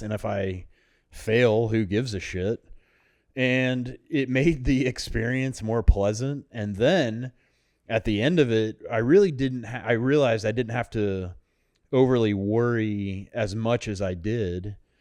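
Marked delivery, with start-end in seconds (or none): none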